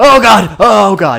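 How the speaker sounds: very shrill, loud, slow, drawn-out yelling. Playing a game as the character falls downstairs: yelling. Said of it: "don't yell, though".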